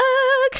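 very high call in a morning voice. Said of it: "attempt with my morning voice to do an Ugg".

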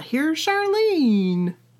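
loud, cartoonish voice. Introducing the guest, Charlene, accidentally sounding like Kermit. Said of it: "That sounded like Kermit".

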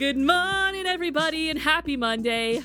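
hyped-up, excited, high-pitched voice. Redoing the opening greeting after calling for hype: excited greeting. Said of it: "Get the hype!".

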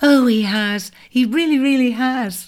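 said through a laugh. Narrator reading Enid's reply to Jem, laughing. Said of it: "laughed Enid".

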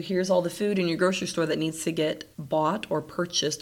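plain

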